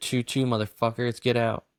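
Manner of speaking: normal talking voice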